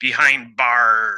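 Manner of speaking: put-on pirate voice. Retelling how the police chief said a line: imitating a pirate voice. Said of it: "he sounded like a pirate".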